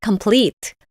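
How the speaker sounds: complete with stress on the second, final syllable. Teaching English word stress in Korean: complete stressed on second syllable. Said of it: "강세가 complete 뒤쪽에 있습니다. 발음해볼게요".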